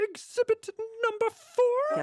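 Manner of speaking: very high, full diva puppet voice. Urged on by others, speaker tries reading the exhibit aloud in a Miss Piggy voice. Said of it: "read that in a Miss Piggy voice".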